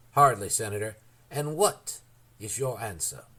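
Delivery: plain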